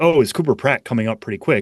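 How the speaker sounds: ordinary talk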